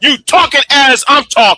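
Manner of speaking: pitch pushed high and words stretched out. Arguing with another speaker who keeps talking over him: shouting. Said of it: "Nah, you're shouting, bro".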